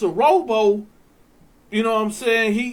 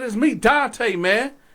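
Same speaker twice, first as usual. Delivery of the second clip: usual speaking voice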